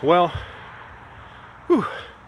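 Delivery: winded, out of breath. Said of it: "let me catch my breath".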